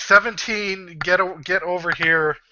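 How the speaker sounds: drawn-out, high-pitched calling out. Voicing a character calling from around the corner: character yelling.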